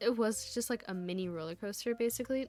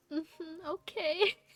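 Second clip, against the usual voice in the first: weepy, sobbing, higher-pitched small voice; 7 semitones higher than usual. Retelling friends comforting them before the ride, imitating own past sobbing. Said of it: "I'm fucking sobbing".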